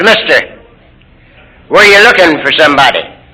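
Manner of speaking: plain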